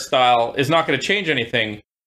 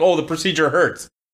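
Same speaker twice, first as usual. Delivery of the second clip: ordinary delivery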